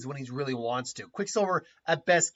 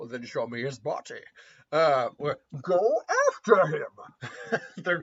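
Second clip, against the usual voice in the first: muffled villain voice, slower pace. Speaker demonstrates how to do the voice, in a Bane voice. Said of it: "That's how you do a Bane voice".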